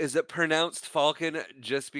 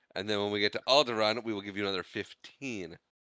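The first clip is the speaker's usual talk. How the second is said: usual speaking voice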